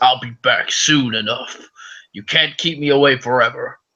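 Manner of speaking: big, brutish giant orc voice. Voicing an orc who was thrown back and now retreats: voicing a giant orc. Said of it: "the orc goes flying backwards, ... and he goes".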